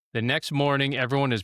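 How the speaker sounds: plain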